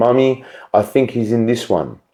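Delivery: put-on muted, murmured, heavy British accent. Retelling a scary office story, imitating a little girl's heavy British accent. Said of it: "muted voice of a little girl with a heavy British accent".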